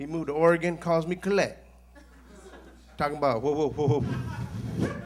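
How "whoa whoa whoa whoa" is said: loud, slow stutter repeating whoa over and over. Retelling a friend's phone call from Oregon, imitating Hector stuttering. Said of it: "He stutters".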